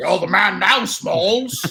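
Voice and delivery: put-on Scottish accent. Asked by another speaker to say the line in a Scottish accent. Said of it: "you got to say it in a Scottish accent".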